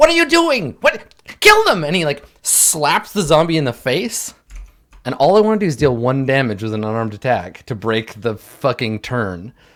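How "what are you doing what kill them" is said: very high, piercing, shrill, loud voice. Narrating a game, voice a skull-masked figure in a shrill voice. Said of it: "he's like got this shrill voice".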